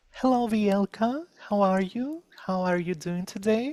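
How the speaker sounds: feminine voice. Recalling the voice used when living in Ukraine: raised, more feminine voice. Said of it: "I used more feminine voice ... I was speaking like that".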